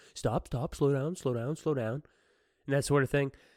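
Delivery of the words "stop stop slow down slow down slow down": patronizing, condescending, talking-down tone. Retelling how the man silenced her, hand up: imitating a condescending man. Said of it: "being all condescending and shit".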